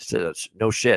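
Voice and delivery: ordinary talk, nothing marked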